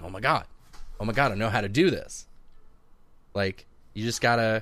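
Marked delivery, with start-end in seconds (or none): none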